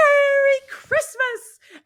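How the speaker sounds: elated, joyful cry, very loud and very high. Retelling the film's ending, the character running through town: imitating George shouting joyfully. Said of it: "he shouts".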